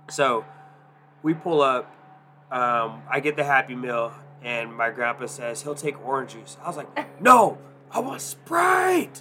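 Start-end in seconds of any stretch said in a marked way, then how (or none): 7.2-9.2 put-on angry yelling, very high and loud. Retelling correcting grandpa's drink order at the pickup: retelling an angry shrill yell. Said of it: "I sounded really angry, really fucking shilling".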